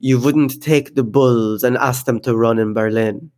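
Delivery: put-on French accent. Quoting a man refusing to bring the show to Berlin, French accent. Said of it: "this is my French accent".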